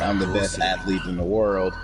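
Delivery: plain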